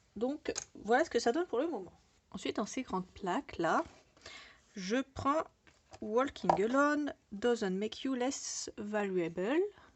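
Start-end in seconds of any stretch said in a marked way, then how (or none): 4.8-9.6 slow, tongue-in-cheek, ironically proud English accent. Presenting a project, the speaker reads an English title, self-mocked English accent. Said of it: "avec mon superbe accent anglais".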